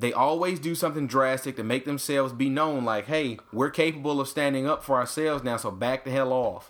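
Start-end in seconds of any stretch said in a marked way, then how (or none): none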